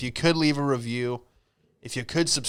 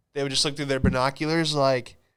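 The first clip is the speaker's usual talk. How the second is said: normal talking voice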